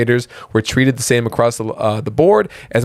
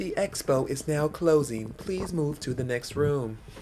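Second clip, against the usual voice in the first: put-on soft, hushed announcer voice; 2 semitones higher, 13 dB quieter than usual. Playing someone announcing over the intercom: imitating an intercom announcement. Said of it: "someone over the overcom".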